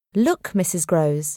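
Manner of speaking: ordinary delivery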